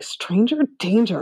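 said under one's breath. Retelling what you muttered while giving her glare eyes, under your breath. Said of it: "like under my breath".

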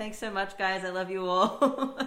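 sweet, high voice belted very loud. Describing how a performer ends his show, imitating a sweet Canadian boy voice. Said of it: "with his really sweet Canadian boy voice".

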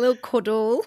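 mock Derby accent in a put-on voice. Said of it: "the way you say that as well with your Derby accent".

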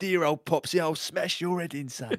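put-on tough old-school geezer talk. Signing off the show by doing the best Tony impression. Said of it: "can we all do the best Tony impression".

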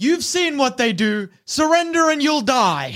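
high, loud shouting. During a standoff, a game master's character calls out to the players, shouting. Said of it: "Dyrax shouts".

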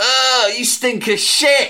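put-on shrill, very loud, high, slowly drawn-out outburst. Retelling what a man sitting next to them said, retelling saying it really loudly. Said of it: "he just went really loudly".

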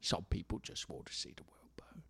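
put-on voice, whispered. Repeating a quoted line, doing a Michael Caine impression. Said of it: "I'm Michael Caine".

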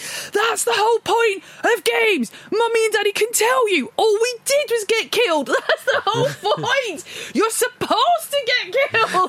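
put-on shrill, very high yelling rant. Recalling hearing the father yell at their child about a game, imitating someone yelling. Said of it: "I could just hear Mark just yelling at him".

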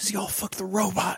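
feeble, barely voiced, very quiet. Retelling how she answered his question, imitating her weak reply. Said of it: "she just like weakly goes".

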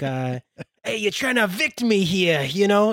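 high-pitched put-on Chicago accent. Imitating the toe fungus guy from an athlete's foot ad, in a put-on chicago accent. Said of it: "they got like the Chicago accent".

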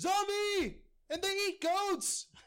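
shrill, high-pitched shout with alarm. Player's character running through the streets of Avuba from a zombie, shouting. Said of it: "and I'm just shouting".

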